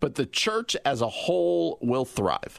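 plain

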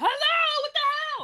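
angry, disbelieving yell. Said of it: "Or I'll be like".

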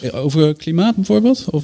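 mocking, sarcastic jab. Speaker asks another speaker a question about a man's interview remarks, sarcastic. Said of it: "je doet sarcastisch".

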